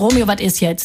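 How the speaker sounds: ordinary delivery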